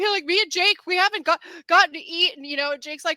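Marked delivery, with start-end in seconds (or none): 0.2-2.4 high-pitched, play-acted blubbering sobbing voice. Imitating a contestant who cries in the background: mock crying, imitating Drew. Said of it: "he's in the background crying all the time".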